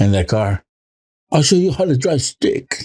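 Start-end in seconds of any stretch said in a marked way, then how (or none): 1.3-2.9 terrible, bad, fake put-on British accent. Joking about what women want, trying out a bad British accent. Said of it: "British accent".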